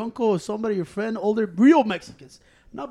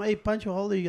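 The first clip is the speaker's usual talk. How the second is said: plain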